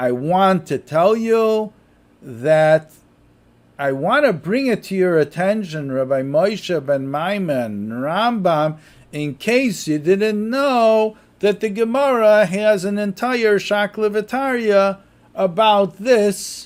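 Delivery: play-acted slow, facetious, sarcastic lecturing tone. Retelling a student's words to the rambam: imitating a sarcastic student. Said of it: "I'm saying it, you know, sarcastically".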